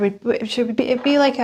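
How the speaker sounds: stammering, stuttering, tripping over words. Suggesting a kind of career to the listener, stuttering. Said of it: "I'm sorry, I'm stuttering".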